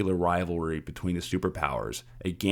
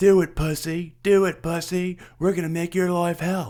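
shrill, very high, loud taunting scream; 11 semitones higher, 6 dB louder than usual. Retelling a video where men taunt a guy with a gun, imitating their screaming. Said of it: "they're still screaming at him like".

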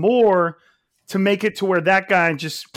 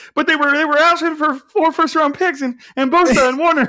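put-on, high, super emotional, near tears, pleading; 8 semitones higher, 4 dB louder than usual. Picturing the other speaker's quote as said tearfully: super emotional John Lynch, almost crying. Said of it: "a super emotional John Lynch, like, it's, like, almost crying".

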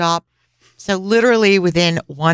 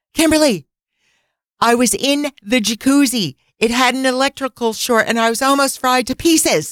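play-acted, loud, high-pitched, just short of yelling; 6 semitones higher than usual. Retelling what Oleandra said to the speaker, in a loud voice. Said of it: "she's saying this to me in a loud voice".

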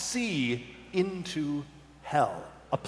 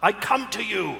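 high, loud yelled-out voice; 5 semitones higher, 5 dB louder than usual. Voicing a character who steps forward onto his own dagger: yelling. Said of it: "And he yells out".

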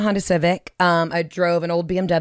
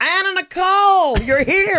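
mock very high, long-stretched, drawn-out scream; 12 semitones higher, 4 dB louder than usual. Retelling how an old gym regular greeted them: imitating Moses screaming. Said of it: "he would just scream".

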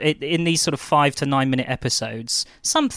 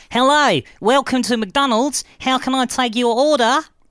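put-on Australian accent, very high and loud; 11 semitones higher, 5 dB louder than usual. Imitating a fast-food worker taking an order: put-on Australian accent. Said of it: "they're Australian, aren't they?".

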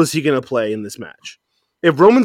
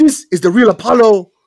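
put-on Nigerian accent, pitched up; 7 semitones higher, 4 dB louder than usual. Showing someone how he talks in his promos now, do Apollo's Nigerian accent. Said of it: "He talks like this now".

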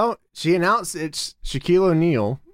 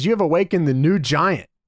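ordinary delivery

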